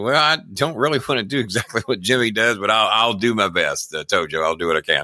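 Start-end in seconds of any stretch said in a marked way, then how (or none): none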